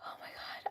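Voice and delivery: soft, breathless, overwhelmed whisper.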